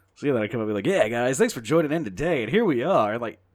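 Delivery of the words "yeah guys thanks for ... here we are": loud, exaggerated, put-on radio-host voice. Recalling thanking the guys for joining: exaggerated put-on radio voice. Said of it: "I'm clearly putting something on right there when I'm talking".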